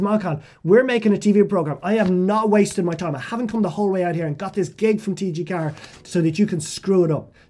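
loud, angry scolding tone.

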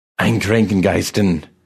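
hissing. Narrator voices the old man from the neighboring bed hissing at Jack, hissing. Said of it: "the revenant hissed at him".

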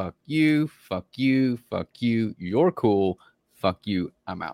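movie-line style ranting delivery. Acting out the quitting scene from Half Baked: Half Baked quitting scene. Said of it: "I want so bad to do the From Half Baked scene".

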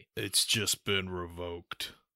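put-on soft, gruff, grizzled old action-hero voice, cool and clichéd. Asked for a cliché action movie line: gruff aged action hero impression. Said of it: "your best gruff aged action hero impression".

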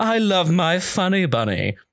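fluffy, light yet sadistic voice. Explaining the trick to doing a Pegasus voice, he demonstrates: Pegasus voice, fluffy and light. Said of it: "you have to be sort of very fluffy and light, but equally sadistic".

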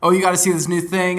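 bursting with excitement, high and loud. Speaker retells a late-night Snapchat with a friend, imitating a super-excited friend. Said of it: "my friend was like super excited".

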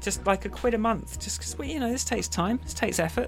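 high-pitched, whiny, begging tone.

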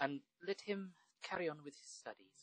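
put-on Irish-accented voice. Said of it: "I just went Irish for some reason".

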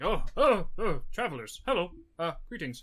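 hurried, flustered voice. Voicing a halfling stepping outside in a rush to greet travelers: flustered, rushed halfling. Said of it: "he looks like he's in a bit of a rush".

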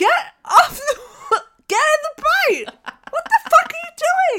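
very high, shrill, loud screaming outburst. Retelling yelling at the screen while watching: imitating own screaming. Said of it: "I was screaming".

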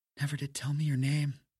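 in a whisper. Narrator reads Maureen's line to the narrator, [name]: whispered. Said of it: "Maureen whispered".

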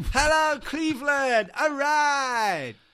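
very high, loud, rock-star arena stage voice. Rehearsing a big entrance greeting before the gig: rehearsing a big stage intro. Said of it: "That's me rehearsing for my big intro".

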